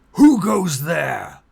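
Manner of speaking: very loud, booming, authoritative voice. Game master voicing someone calling up from below in Orcan: booming authoritative voice. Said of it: "this booming voice speaking out in almost magical authority".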